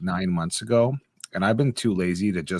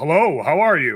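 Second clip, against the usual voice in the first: slow, put-on alert, fake wide-awake voice; 6 semitones higher than usual. Describing being woken by a morning phone call, the speaker does a fake voice answering phone. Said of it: "like you do the fake voice".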